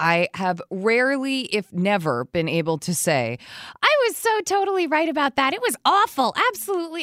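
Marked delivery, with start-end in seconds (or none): 3.8-7.0 very high, put-on whiny voice. Acting out a line of his own he rarely gets to say, in a put-on whiny voice. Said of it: "that is my whiny voice".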